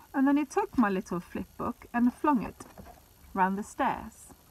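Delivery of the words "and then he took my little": plain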